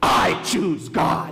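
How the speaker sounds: put-on furious, heated, very angry and upset tone. A preacher retells what one person said to him; retelling a very angry tone. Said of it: "in a very angry tone".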